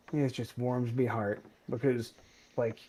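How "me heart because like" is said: ordinary talk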